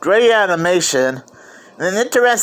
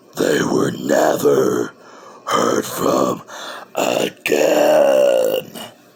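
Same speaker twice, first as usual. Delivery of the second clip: very slow, spooky storyteller drawl. Storyteller reading a story aloud, switching to the scary voice for one part. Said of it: "I had to use the scary voice".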